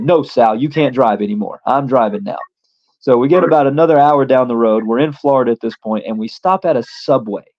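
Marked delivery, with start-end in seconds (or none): none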